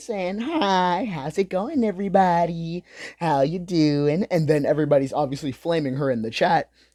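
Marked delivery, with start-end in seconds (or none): 0.4-4.3 sweet, slow, cutesy little voice. Retelling a streamer greeting her chat: imitating a cute streamer greeting. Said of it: "She's doing this cute little streamer shit".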